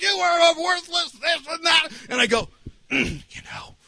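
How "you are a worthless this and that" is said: mock high-pitched berating yell. Retelling what a guy yelled at him: retelling a yell. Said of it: "yelling at me".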